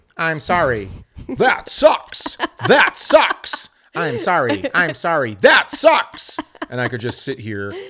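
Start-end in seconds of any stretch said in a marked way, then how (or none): 0.2-6.4 put-on canned button playback, higher and louder. Mocking stock sympathy lines as a press-button soundboard: imitating a soundboard button. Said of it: "those radio button bars and just be like".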